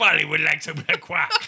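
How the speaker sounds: put-on parrot voice with French accent. Co-host goofing around during a podcast intro, French pirate parrot voice. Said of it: "Can you stop doing that?".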